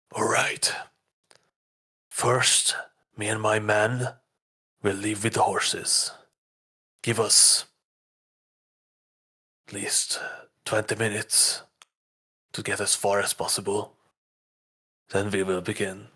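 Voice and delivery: conspiratorial, secretive tone. Voicing Bane giving a plan in a dark basement: hushed voice. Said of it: "in a hushed voice speaks".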